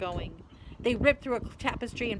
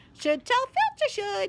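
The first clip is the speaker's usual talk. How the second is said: sweet, saintly, innocent voice, pitched up; 11 semitones higher, 5 dB louder than usual. Reading a story, voicing Peeves speaking to Ron, in a saintly voice. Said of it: "said Peeves in a saintly voice".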